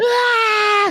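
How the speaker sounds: put-on scream, high, loud and pained.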